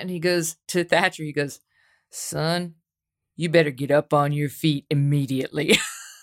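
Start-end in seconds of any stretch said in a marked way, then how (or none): 2.1-5.8 put-on cowboy accent, slower. Retelling what a cowboy told Thatcher, imitating a cowboy accent. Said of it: "he's got the cowboy hat and he's got the accent".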